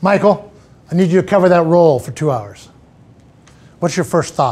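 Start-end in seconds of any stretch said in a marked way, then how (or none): 0.0-2.7 firm, clear, assertive delivery. As a boss asking Michael to cover a role, firm and assertive. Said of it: "There's a certain level of assertiveness in my voice".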